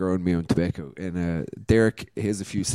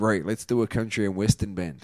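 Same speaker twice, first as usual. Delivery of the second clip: ordinary talk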